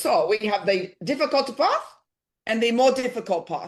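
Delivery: put-on Chinese accent. Speaker retells what a woman in Beijing said to them, put-on Chinese accent. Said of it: "I'm going to do an accent".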